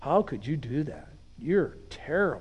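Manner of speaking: put-on accusing delivery. Acting out a gleeful accusation after a fall: mock accusing tone. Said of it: "he starts the whole accusation".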